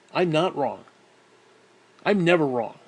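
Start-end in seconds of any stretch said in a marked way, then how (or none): none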